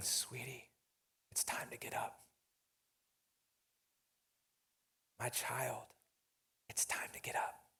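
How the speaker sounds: very quiet, soft, gentle whisper. Retelling Jesus taking her hand and waking her from death: gentle whisper like a mom. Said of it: "And he whispers, like your mom would whisper".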